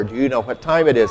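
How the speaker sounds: normal talking voice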